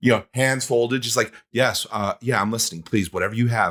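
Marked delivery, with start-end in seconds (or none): 1.5-3.7 mock formal professional tone, lower pitch. Retelling the improv teacher's reply, hands folded: imitating a teacher going super professional. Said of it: "go super professional".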